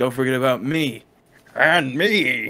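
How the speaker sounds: very loud, bellowing comic-book villain voice, taunting. Doing a joke as a movie villain for another speaker: Two-Face voice. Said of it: "this is harping on Tommy Lee Jones, Two-Face".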